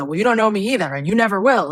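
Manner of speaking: fast, furious, very angry delivery. Speaker retelling what she snapped back during training, acting out an angry retort. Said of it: "very angry".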